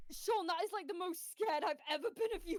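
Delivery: sobbing through words, very high and loud. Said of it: "I'm actually crying".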